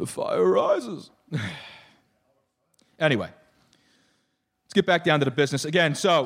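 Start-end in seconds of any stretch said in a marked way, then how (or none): 0.0-1.1 put-on villain voice. Speaker demonstrates the voice someone was just described using, in a Bane voice. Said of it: "It is his Bane voice".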